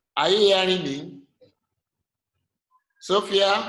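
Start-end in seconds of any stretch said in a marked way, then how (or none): none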